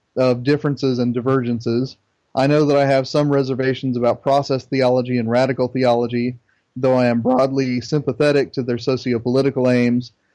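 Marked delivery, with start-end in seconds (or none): none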